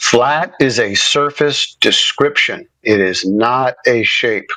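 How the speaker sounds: very slow, deliberate, drawn-out, word-by-word delivery. Correcting someone who misread their claim, talking real slow. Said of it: "Let me talk real slow".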